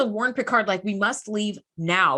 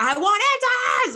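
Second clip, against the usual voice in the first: huffy, annoyed tone at a higher pitch; 11 semitones higher than usual. Retelling a captain demanding answers again: imitating a huffy Picard. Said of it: "He's getting very huffity and puffity about it".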